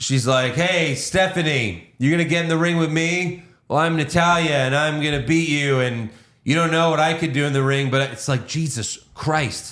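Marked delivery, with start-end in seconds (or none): 0.5-7.9 flat, uncharismatic, lifeless loud announcing delivery. Retelling a wrestler's promo that called out Stephanie: imitating Natalia's uncharismatic promo. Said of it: "have some charisma, lady?".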